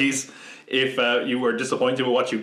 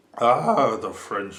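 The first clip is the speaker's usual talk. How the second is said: put-on drunk old actor voice. After too many takes of a video sign-off, Orson Welles wine-ad impression. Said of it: "like Orson Welles in that wine ad".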